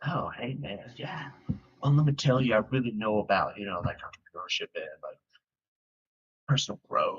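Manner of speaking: hollow, fake, put-on confident tone. Describing people the speaker has met, imitating fake confidence. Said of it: "it just sounds so fake".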